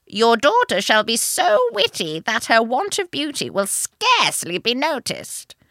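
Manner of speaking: put-on loud, swooping, old, witchy fairy voice. Reading a fairy tale aloud, voicing the fairy: old witchy fairy voice. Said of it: "it's going to be like oldie and witchy".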